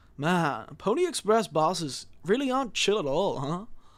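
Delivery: laid-back, easygoing surfer dude voice. Voicing the character Daisuke while reading his lines aloud: Daisuke surfer dude voice. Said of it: "so I'm gonna give a surfer dude voice".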